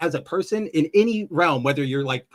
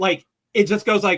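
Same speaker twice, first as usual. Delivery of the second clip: ordinary talk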